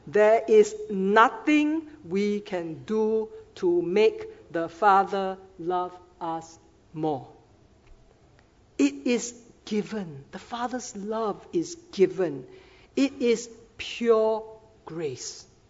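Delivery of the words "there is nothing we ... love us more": very slow, deliberate, word-by-word delivery. Repeating a statement to listeners, in slow motion. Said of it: "Let me repeat that in slow motion".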